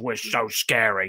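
deliberately gruff, rough wrestler-style tough-guy voice. Retelling wrestlers' promo, imitating gruff voices. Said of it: "Mace and T-Bar doing gruff voices".

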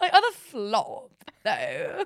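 put-on posh voice. Repeating the other speaker's words back, imitating a posh voice. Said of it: "really posh then".

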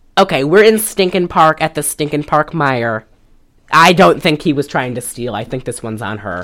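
ordinary talk, nothing marked

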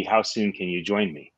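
ordinary talk

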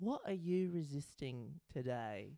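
soft, calm put-on British accent, narrator voice. Describing a Headspace course, quoting the man's question, Headspace man's British accent. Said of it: "I'm trying to do British".

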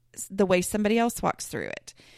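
normal talking voice

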